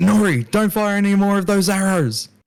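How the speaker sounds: high, acted, in-character shouting. Voicing Renvar warning Nori to stop firing arrows: yelling in character. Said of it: "Renvar yells out".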